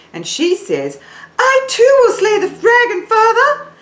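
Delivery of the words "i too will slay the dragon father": very high, loud tone placed in head voice. Demonstrating a character's line for singers, in a high forehead-placed voice. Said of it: "she says it from right up here in her forehead".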